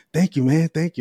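put-on excited voice. Retelling how someone answered a compliment: imitating excited thanks. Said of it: "he got all excited".

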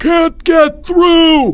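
very high, loud, shrill screaming cry. Albert tries to plunge into the mass of third graders, screamed. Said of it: "Albert screamed".

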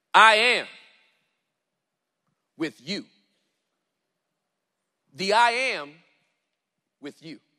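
deliberate, emphatic, slow, very loud reading. Showing listeners how a line should be read, slowed right down. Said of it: "It should be read like this".

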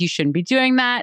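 mad, cutting, scolding, reproachful tone. Retelling a reality show argument between former partners: imitating someone angry. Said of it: "she gets incredibly mad at him".

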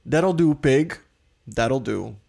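put-on, strong New York accent. Quoting a movie line in a quiz game, new york accent. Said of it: "klinkt zomaar so als New York".

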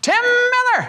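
put-on very high-pitched voice with a Texas accent. Recounting how the pastor greets you, imitating Wayne, high-pitched. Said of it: "High-pitched voice".

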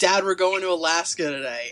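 ordinary talk, nothing marked

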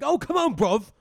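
annoying, shrill, loud put-on British accent. Joking about annoying British accents: put-on annoying British accent. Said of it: "there's also annoying British ones too".

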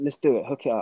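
ordinary delivery

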